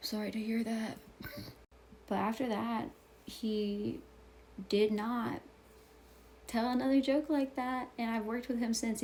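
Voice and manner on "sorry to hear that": muttered under breath. Recounting how a coworker looked over and apologized, retelling a mumble. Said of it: "and he mumbled".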